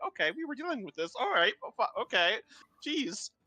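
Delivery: sounding stung, wounded and hurt. Voicing a character answering an accusation in the party: sounding hurt. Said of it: "she looks hurt at that one".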